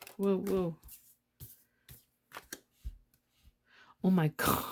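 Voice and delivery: words spoken while breaking into laughter. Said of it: "I didn't mean to laugh".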